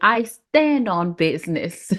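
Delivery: slow, careful, very proper enunciation. Retelling how Izzy said the phrase: imitating Izzy's proper delivery. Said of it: "Izzy said it all proper".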